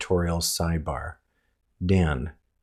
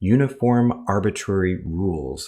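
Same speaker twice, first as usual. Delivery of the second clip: ordinary talk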